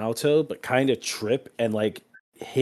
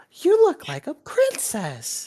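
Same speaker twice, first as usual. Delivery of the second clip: put-on very high little girl voice. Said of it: "Ayla's like".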